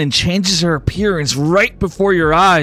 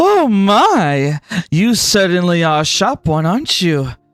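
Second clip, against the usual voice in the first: flirty, feminine voice with drawn-out my. Voicing a demon woman who laughs at the window: flirtatious feminine voice. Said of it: "a flirtatious and feminine voice fill the air".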